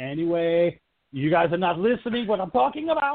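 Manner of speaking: rising volume. Retelling a movie scene's explanation over screaming people, retelling getting louder and louder. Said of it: "just getting louder and louder with his explanation".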